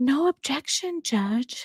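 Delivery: seductive, sultry tone. Reading out a chat suggestion for Megan's trial line: sultry voice as Megan. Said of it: "in a sultry voice, Megan would say".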